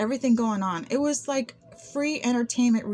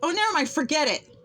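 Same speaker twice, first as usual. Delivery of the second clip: sudden, dismissive, pitched-up brush-off tone; 5 semitones higher than usual. Retelling what a man said after being asked to repeat, imitating him saying it loud. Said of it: "real loud".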